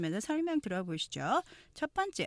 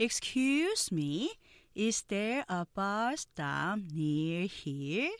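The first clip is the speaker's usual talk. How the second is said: very slow, careful, word-by-word pronunciation. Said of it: "느린 속도 발음 듣고 천천히 따라해".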